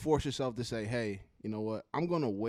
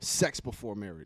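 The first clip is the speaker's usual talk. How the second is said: forceful, powerful announcer-style delivery. Bringing up a new topic to close out: powerful announcing delivery. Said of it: "You see how I came in all powerful like that?".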